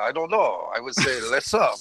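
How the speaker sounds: bad, crappy, fake French accent. Quoting a French friend asked how to say SUP, in a crappy French accent. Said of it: "He does it in a crappy French accent as well".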